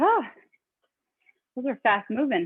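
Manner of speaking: out of breath, breathing hard. Talking viewers through a rest break after a fast round, breathing hard. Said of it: "I'm breathing hard".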